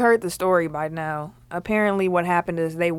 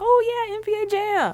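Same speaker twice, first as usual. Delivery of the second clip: put-on very high, slow, thrilled little-kid voice. Retelling being a child called to play a game: imitating own excited child self. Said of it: "I'd be all excited, like".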